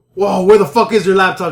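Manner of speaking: play-acted nasty, hostile tough guy, loud and mean. Retelling how the first guy asked about a laptop: imitating someone being really mean. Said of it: "real mean".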